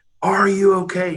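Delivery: put-on loud yell. Waist-deep in a freezing lake, speaker calls out to swimmers, retelling a loud yell. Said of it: "I'm getting louder and louder".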